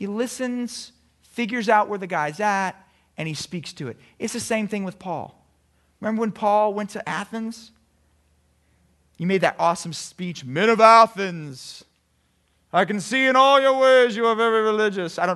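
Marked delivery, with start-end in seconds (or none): 10.4-15.2 loud, grand, proclaiming preacher voice. Acting out Paul's speech in Athens, in a put-on Paul voice. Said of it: "that's my Paul voice".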